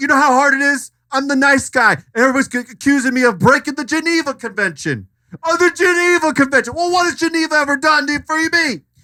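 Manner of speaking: heated outburst. Ranting on a film set about being accused: angry rant. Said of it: "let's chill out".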